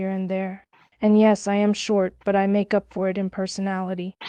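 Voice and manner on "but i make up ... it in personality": normal talking voice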